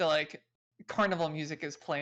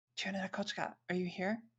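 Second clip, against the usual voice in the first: hushed, soft whisper under the breath; 2 semitones higher, 7 dB quieter than usual. Kat leans over as if grabbing something below her seat, whispering. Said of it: "she whispers like".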